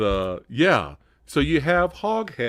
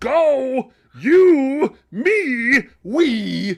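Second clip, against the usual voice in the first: mock shouting, higher and louder; 14 semitones higher, 8 dB louder than usual. Imitating a movie brother who yelled at everything: imitating a yelling character. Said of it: "he just yelled at everything".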